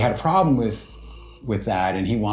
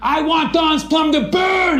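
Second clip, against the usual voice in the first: mock, very high, furious raging scream; 4 dB louder than usual. Retelling how Toby finally lost it with Artie, retelling a furious scream. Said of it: "He starts screaming".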